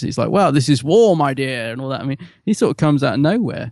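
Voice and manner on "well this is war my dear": slow, drawn-out posh British drawl. Quoting a chauvinistic character from the show: posh British voice as Robert Walker. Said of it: "a very posh, uh, sorry, a very British guy".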